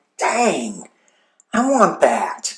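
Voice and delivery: teary, whimpering, swooping whine. Retelling one's own past reaction to a book, in a whiny voice. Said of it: "I said it in the whiny voice".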